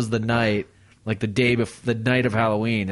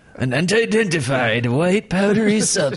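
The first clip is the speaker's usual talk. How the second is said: put-on scary narrator voice, pitched higher; 7 semitones higher, 3 dB louder than usual. Retelling a news story after being asked for a Vincent Price voice. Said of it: "Can you do it in a Vincent Price voice?".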